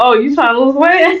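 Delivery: nasty, taunting tempter voice. Retelling what the devil said about losing weight: devil voice. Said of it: "the devil was like".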